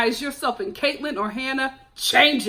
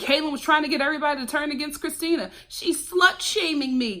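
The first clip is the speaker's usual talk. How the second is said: ordinary talk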